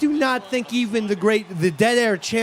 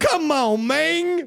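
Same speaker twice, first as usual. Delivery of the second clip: high sportscaster voice, hard G ending "man"; 7 semitones higher than usual. Show how he pronounced it on Monday Night Football: Cris Carter impression, pronouncing a G. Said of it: "Chris Carter pronounces it with a G. He goes".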